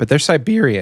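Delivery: voice cracking. Cutting in on another speaker in a casual chat, voice cracking. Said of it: "do you hear the voice crack?".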